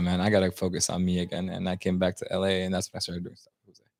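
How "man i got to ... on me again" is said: ordinary delivery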